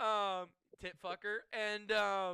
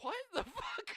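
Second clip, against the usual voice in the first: high-pitched, shouted, baffled squealing outburst. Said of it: "Kevin Stevens is just like".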